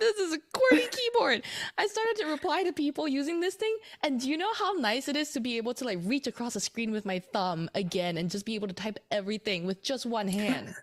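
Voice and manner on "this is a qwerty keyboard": high, loud, laughing squeal of disbelief. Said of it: "I know I'm sounding a little incredulous".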